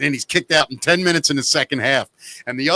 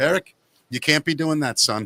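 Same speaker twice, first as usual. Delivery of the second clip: put-on, really calm, matter-of-fact delivery. Retelling how, after screaming at everyone, he spoke to one player: retelling a calm remark. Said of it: "Real calmly and walked out".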